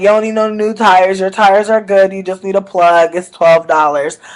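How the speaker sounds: normal talking voice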